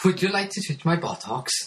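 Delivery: put-on Welsh accent. Showing off the one line they know in a Welsh accent. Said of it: "I couldn't say anything else like that in the Welsh accent".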